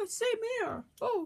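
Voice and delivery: squeaky toy puppet voice.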